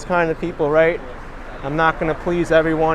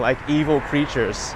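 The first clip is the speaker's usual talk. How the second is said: plain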